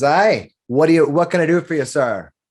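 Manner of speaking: friendly words carried on a laugh. Voicing a dwarf barmaid greeting a customer: laughing while talking in character. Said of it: "she kind of laughs at you, and she says".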